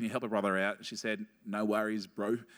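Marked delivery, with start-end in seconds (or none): 1.5-2.4 imitated New Zealand accent. Retelling Harmony agreeing to help on a phone call, in her Kiwi accent. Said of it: "in her Kiwi accent".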